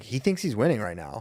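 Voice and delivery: normal talking voice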